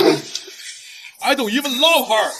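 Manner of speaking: very high, piercing, shrill yell. In a drama scene, a character answers an accusation, yelling. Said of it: "Why are you even yelling?".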